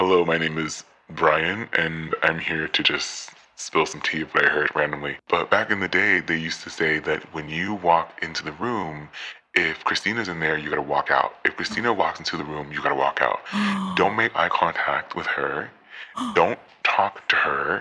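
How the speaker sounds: altered, masked voice. Posing as an anonymous caller calling in with a rumor, disguised voice. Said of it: "we're going to change my voice".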